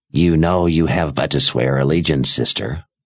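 put-on raspy old woman voice. A narrator reads an old sorceress addressing the attacking sister, raspy old woman's voice. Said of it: "the old woman said in a raspy voice".

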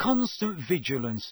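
ordinary delivery, nothing marked

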